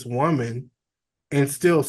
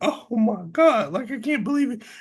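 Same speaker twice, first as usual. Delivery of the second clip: mocking hysterical sobbing, much higher pitch; 8 semitones higher than usual. Describing a woman's reaction, the speaker mimics her, mocking hysterical crying. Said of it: "why are you crying so hysterically".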